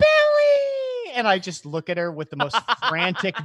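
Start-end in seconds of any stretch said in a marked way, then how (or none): 0.0-1.1 thrilled squeal, very high, loud, drawn-out. Retelling his mom jumping up at the parents' table, imitating an excited mom. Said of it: "my mom jumps up all excited".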